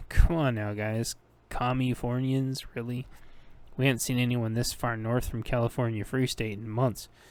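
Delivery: ordinary delivery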